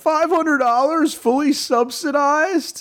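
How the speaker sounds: very high voice with words stretched slowly. Showing a Steve Ballmer impression. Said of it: "Steve Ballmer with Here Comes My Impersonation".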